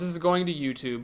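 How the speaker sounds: ordinary delivery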